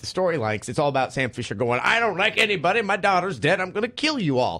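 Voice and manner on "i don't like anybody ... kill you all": put-on crotchety voice, much higher. Explaining how Sam Fisher talks in this one, crotchety Sam Fisher impression. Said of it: "he's really crotchety in this one".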